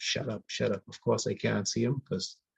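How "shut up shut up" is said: ordinary talk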